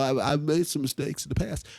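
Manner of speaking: mock stuttering speech. Imitating Mister Car Salesman answering the questions: imitating someone stuttering. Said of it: "he's gonna stutter".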